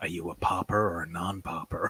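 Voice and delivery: very quiet, low, close-up whisper. Acting out a man whispering into another man's ear, whispering. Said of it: "he whispers into his ear".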